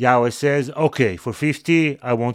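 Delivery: ordinary delivery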